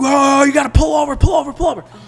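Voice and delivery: put-on shouted, very high, urgent Boston accent. Retelling a road trip mishap and voicing another man's urgent call to stop, in an imitated Boston accent. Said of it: "in that Boston accent".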